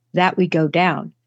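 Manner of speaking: understated, low-key, unpushed delivery. Retelling a girl's words on a recording: imitating someone saying it very quietly. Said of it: "And then very quietly".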